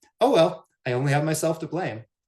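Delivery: high, loud, joyful, carefree, gleeful voice. Retelling a reply from someone coughing after renovation work: imitating gleeful joy. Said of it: "he said it with such joy, with such gleeful abandon".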